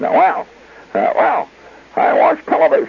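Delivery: squeaky, small little voice. Retelling Clarence answering what he did the day before: squeaky little Clarence voice. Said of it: "he had this squeak little voice".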